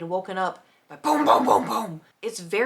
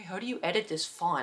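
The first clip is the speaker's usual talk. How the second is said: soft, hushed, half-whispered aside; 8 dB quieter than usual. Retelling half-whispering to someone over Discord near midnight, retelling a half-whisper. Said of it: "I'm like whispering to Nate over Discord".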